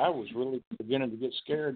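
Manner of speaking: ordinary delivery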